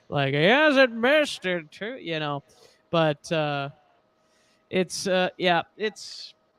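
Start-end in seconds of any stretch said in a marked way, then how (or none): 0.3-1.9 put-on monotone announcer voice, higher pitched. Quoting a broadcaster's call of a missed kick: monotone Pat Summerall voice. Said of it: "in his very monotone, uh, Pat Summerall voice".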